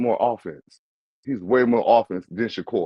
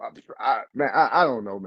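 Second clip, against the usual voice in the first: ordinary delivery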